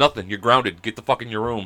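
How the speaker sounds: normal talking voice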